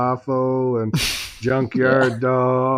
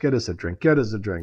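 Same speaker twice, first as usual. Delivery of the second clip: put-on whisper, lower pitched; 3 semitones lower, 4 dB quieter than usual. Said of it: "I start whispering to myself".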